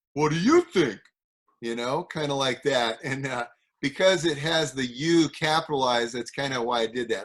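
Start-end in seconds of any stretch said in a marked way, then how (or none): 0.2-1.0 loud put-on New Jersey accent. Reading a title aloud after seeing its capitalized U, in a New Jersey accent. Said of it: "I kind of went into the New Jersey accent".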